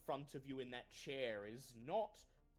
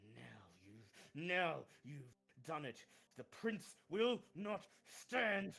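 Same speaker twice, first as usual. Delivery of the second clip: slow, raised, strained, forced through clenched teeth; 5 dB louder than usual. Game narrator voicing a prince looking up at Barry, through gritted teeth. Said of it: "gritting his teeth, and he just says".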